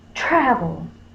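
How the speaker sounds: travel hit hard with strong stress on tra. Teaching syllable stress with a dog named travel, strong stress on tra in travel. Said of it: "If I fuss at my dog named Travel, I'm going to say travel. So tra is going to have the accent or the stress".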